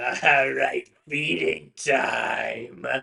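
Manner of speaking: very loud, rough, creaky, grating, drawn-out holler. A game master voices a cry from down below: grating cry. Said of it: "a cry out from down below in a grating voice".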